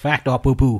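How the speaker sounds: made-up Cajun accent. Hosting a made-up accent show, saying the segment name in a made-up cajun accent. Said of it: "I'm trying to say it in Cajun style".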